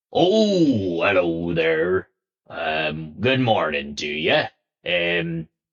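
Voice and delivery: pirate-like dwarf voice with drawn-out "oh". Storyteller voices the man behind the bar greeting a customer: piratey voice. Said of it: "He's very piratey".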